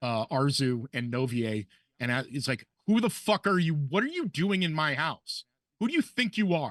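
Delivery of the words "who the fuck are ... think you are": acted-out furious shouting, high-pitched. Voicing a man behind a desk confronting intruders: man yelling at intruders. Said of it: "he is yelling at".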